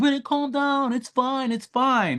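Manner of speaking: put-on very high, slow talk, laughing through words. Retelling how she stopped in the street laughing at the speaker, imitating someone laughing while talking. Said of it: "stopping in the middle of the street and laughing".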